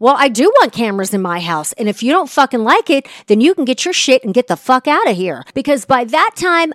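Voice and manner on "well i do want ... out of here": put-on exasperated, fed-up, angry tone with cursing. Retelling own reply in a fight: retelling own fed-up angry reply. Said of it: "I was fed up".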